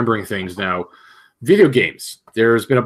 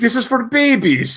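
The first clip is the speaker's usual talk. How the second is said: put-on very high-pitched, thick, heavy Russian accent; 12 semitones higher than usual. Quoting how a guy says a phrase, in a thick russian accent. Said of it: "like in a very thick Russian accent".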